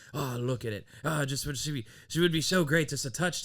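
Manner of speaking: speaking in a put-on Irish accent. Acting out one of two young men reacting at the top, in a put-on irish accent. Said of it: "I don't know why I give him an Irish accent".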